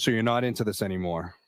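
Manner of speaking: ordinary talk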